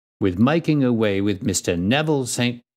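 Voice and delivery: ordinary talk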